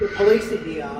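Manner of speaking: normal talking voice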